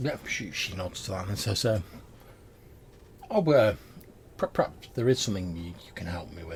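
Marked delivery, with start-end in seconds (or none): 3.3-6.6 even, unhurried, composed, measured voice. A narrator voices a woman answering the group's request; calm and measured voice. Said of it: "her voice is very sort of like calm and measured".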